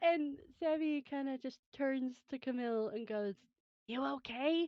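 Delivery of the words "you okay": soft hushed whisper, much higher. A character turns to a companion after the villains fall, hushed whisper. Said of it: "in a kind of hushed whisper".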